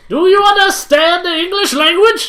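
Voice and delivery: very high, shrill hollering yell. Acting a judge questioning a defendant in court: yelling. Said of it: "you're yelling".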